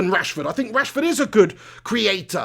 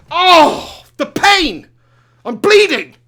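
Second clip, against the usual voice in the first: very loud, drawn-out, slow, high howl of pain; 8 semitones higher, 8 dB louder than usual. Stopping mid-sentence to react after biting tongue: in pain from a bitten tongue. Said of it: "I just bit my freaking tongue".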